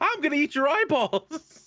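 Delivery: high-pitched harpy voice. Picturing a harpy lifting someone up, Harpy with Sean Schimmel's voice. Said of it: "one of the Harpies with Sean Schimmel's voice".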